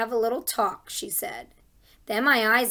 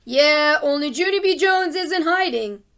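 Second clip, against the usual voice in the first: spooky, raised, high scary voice; 5 semitones higher, 7 dB louder than usual. Narrator reads her own line, spoken from hiding under a desk, in a scary voice. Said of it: "I said in a scary voice".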